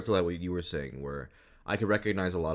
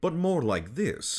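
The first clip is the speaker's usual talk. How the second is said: mid-Atlantic accent, pitched high; 10 semitones higher than usual. Explaining that some of their voices are not British, demonstrating the Frasier accent. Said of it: "it's the Frasier accent".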